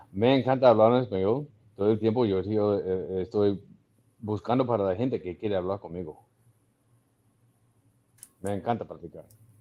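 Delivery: convincing, practiced, pretty good Spanish accent. Speaking spanish after being asked to: good spanish accent. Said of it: "that's a pretty good accent".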